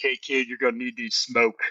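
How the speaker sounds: hefty, beefy, big burly tough-guy voice. Retelling what a guy from an armored truck said to him, big burly voice. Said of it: "came up to me with like a big burly voice".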